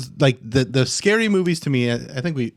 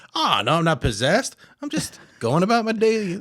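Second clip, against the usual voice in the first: put-on Creole-flavoured New Orleans accent, pitched up; 5 semitones higher than usual. Imagining how a sneaky demon would talk: New Orleans accent. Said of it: "you have a New Orleans accent".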